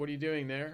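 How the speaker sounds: plain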